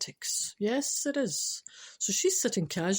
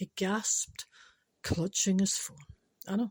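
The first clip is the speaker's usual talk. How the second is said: ordinary delivery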